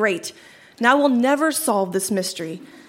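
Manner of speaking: usual speaking voice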